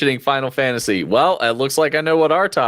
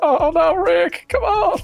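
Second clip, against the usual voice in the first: very high, slow, warbly voice. Recalling how a swamp creature sounded: Ghost in a Jar voice. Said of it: "he sounded like Ghost in the Jar from Rick and Morty".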